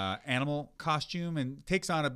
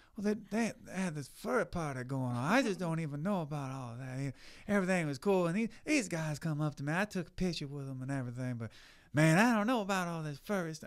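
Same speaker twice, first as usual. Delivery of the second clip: put-on southern voice, higher pitched; 4 semitones higher than usual. Retelling what Herschel Walker said about a furry party: Herschel Walker impression. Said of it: "I can't know if I can do a good Herschel".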